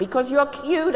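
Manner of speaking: frantic yell, pitched way up, high and loud. Narrator reads a character answering a man's question, shouting. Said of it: "I shouted".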